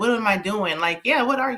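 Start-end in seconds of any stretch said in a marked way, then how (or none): none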